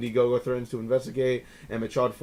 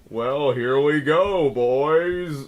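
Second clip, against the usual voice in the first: very slow, super creepy host drawl; 2 semitones higher, 6 dB louder than usual. Describing a host of a raunchy movie review show, imitating his super creepy voice. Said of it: "He has a super creepy voice".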